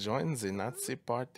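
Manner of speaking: slow, put-on German accent. Retelling how a podcast host said a line: german accent. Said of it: "in the fucking German accent".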